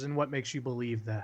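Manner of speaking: dry, sarcastic, mocking tone. Voicing a character questioning a player's claim, sarcastic. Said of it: "sarcastically turns around and she goes".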